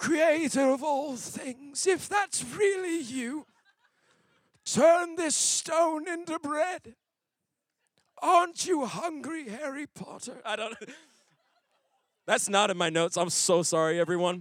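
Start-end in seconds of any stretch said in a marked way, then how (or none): 0.0-10.4 very high, slow, drawn-out, sly villain voice. Explaining the temptation of Jesus, the speaker voices the tempter in a Voldemort voice. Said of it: "he's Voldemort".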